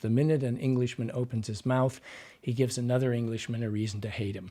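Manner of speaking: usual speaking voice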